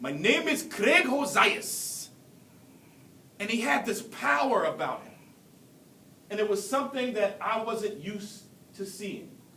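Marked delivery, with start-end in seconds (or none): 0.0-2.1 put-on slow, deliberate, swooping South African accent. Speaker recalls how a student from South Africa said his name: Craig Hosias's South African accent. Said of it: "in his South African dialect, it sounded like".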